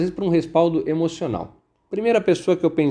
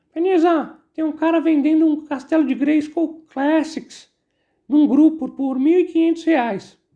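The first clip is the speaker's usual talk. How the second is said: very high, thin, squeaky little voice; 11 semitones higher than usual. Retell the message that a comic expo organizer sent you, in his thin, high little voice. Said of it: "ele tem a voz fininha".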